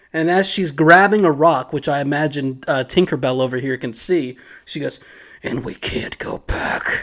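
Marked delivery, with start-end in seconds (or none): 5.5-7.1 slow, deliberate, whispered superhero voice. Retelling a character's threatening line in a scene: Batman voice. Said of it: "Pulls out the, the Batman voice".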